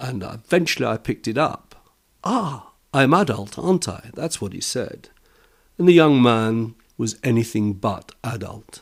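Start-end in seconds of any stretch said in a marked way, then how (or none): 2.2-4.1 put-on slow, pitched-up South London Cockney accent. Repeating what a young smoker said to him, in a south london cockney accent. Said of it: "This is a South London Cockney accent".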